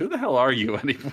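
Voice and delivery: startled, high-pitched, taken-aback blurt. Retelling how a movie character reacts to a woman's strange talk: imitating someone taken aback. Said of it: "so just, like, taken aback by the way she's talking that he just goes".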